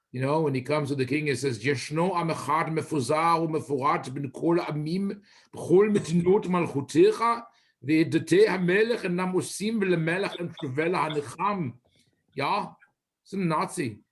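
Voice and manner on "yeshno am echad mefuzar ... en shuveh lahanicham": put-on German accent. Repeating a Megillah reading of Haman's words to the king: Haman with a German accent. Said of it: "I gave Haman a German accent".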